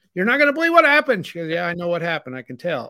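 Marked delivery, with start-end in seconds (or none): 0.2-1.3 very high, excited squealing scream. Speaker retells calling to Sandy in the other room after a touchdown, retelling a scream. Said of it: "I was screaming".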